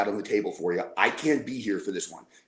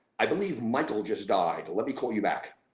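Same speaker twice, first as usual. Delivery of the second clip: plain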